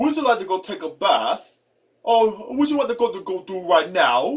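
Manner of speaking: put-on British accent. Explaining how people from england speak, the speaker puts on a british accent. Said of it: "the British accent... You would say".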